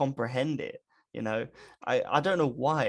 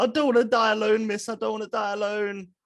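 put-on high, tearful, blubbering sobs; 8 semitones higher, 4 dB louder than usual. Retelling what he said to his teachers at four years old, imitating blubbering crying.

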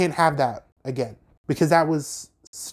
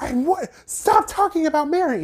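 mock complete breakdown outburst at very high pitch. Retelling a birthday party quarrel: imitating Jen's full breakdown. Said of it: "she had a full breakdown".

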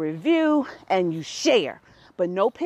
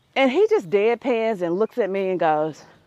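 normal talking voice

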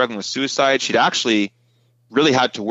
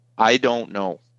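mock quiet, gentle delivery. Retelling a crying girl's answer about Jesus: imitating someone speaking quietly and softly. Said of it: "really quietly and softly".

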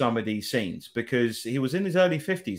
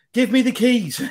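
put-on very high, loud, very English accent; 10 semitones higher, 8 dB louder than usual. Quoting her line from the bit in the van, as english an accent as possible. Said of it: "as English accent as you can get".

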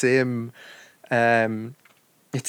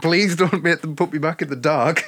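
put-on tearful, crying plea, higher; 4 semitones higher than usual. Retelling a show scene where a woman begs: imitating someone crying. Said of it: "crying her eyes out, going".

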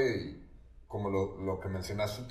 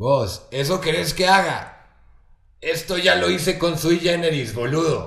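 hoarse, very loud, pitched-up, pushed-out voice; 5 semitones higher, 9 dB louder than usual. Retelling what Charlie said on seeing the tape: Charlie voice, hoarse. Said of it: "voy a tratar de hacer la voz de Charlie".

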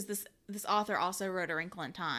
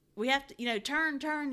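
acted-out high screaming, near a shriek; 6 semitones higher than usual. Recounting a movie scene on a speeding boat, retelling Mischa Barton screaming. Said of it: "Misha Barton's like screaming at him".

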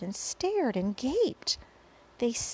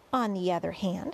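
ordinary delivery, nothing marked

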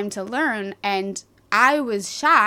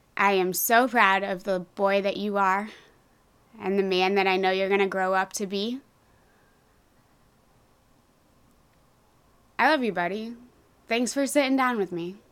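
close to tears, teary. Thanking a child for talking on the show: teary-eyed. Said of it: "I'm getting a little teary-eyed".

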